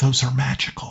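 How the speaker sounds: soft whisper spoken close at the ear. Miles walks up behind you and speaks into your ear: whispering as Miles. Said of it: "Miles walks up behind you and whispers".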